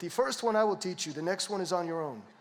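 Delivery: put-on thick Cuban accent, laid on heavily. Retelling a promise from the father's best friend: thick Cuban accent. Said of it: "he had a thick Cuban accent".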